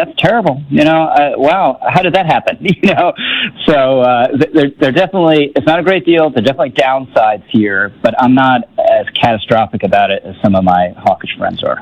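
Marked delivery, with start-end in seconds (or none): 0.0-2.6 high pitch, fake shocked innocence. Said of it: "they could say".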